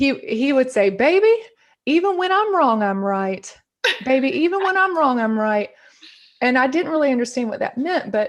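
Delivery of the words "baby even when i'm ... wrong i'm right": put-on Southern accent, rough and tough-sounding man. Quoting her dad's saying from her childhood, in a put-on Southern accent. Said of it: "I always bust into my Southern accent".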